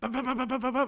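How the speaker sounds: high, rapid-fire vocal camera-shutter bops.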